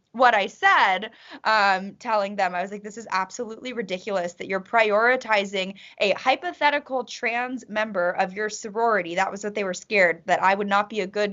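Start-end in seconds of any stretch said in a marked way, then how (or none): none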